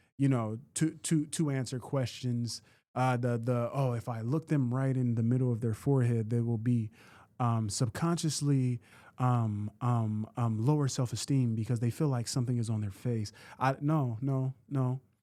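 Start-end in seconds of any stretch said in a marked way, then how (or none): none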